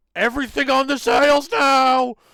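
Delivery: very high, very loud, shrill, panicked shout. Voicing the captain ordering the crew to raise the sails: panicked shouted order. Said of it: "as even he seems panicked".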